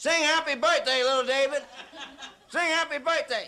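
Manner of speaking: rowdy, loud, high-pitched yell. Acting out Goliath heckling and yelling at David: imitating a heckler yelling. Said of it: "he starts yelling".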